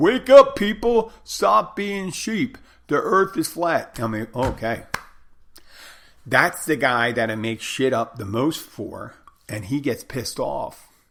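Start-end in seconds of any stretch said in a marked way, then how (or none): 0.0-4.0 shrill, very high, loud yelling. Retelling what a guy yelled real loud: imitating someone yelling real loud. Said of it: "he just yells real loud".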